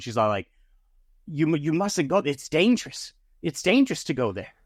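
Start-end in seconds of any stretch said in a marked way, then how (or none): 1.3-4.4 fed-up, almost exasperated voice. Voicing a woman character in a story scene, in an exasperated tone. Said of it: "in almost like in an exasperated tone".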